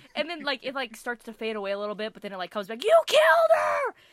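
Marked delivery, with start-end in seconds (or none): 2.8-3.9 piercing, shrill, very loud yell. Retelling how the cousin yelled accusations at the owner: imitating someone yelling. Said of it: "he's yelling at the owner".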